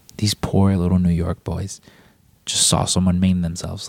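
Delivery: ordinary talk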